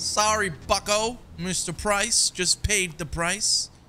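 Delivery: smug, gloating, high, loud and slow.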